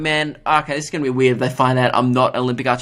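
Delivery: ordinary delivery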